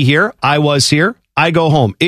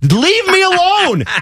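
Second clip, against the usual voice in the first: acted-out shrill scream, pitched very high. Retelling being tailgated on an icy freeway: retelling a scream. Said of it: "I was screaming at this per-".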